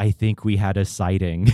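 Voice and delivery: put-on Middle Eastern accent. Recounting what one of the tour goers said, in a thick Middle Eastern accent. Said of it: "said in a thick Middle Eastern accent".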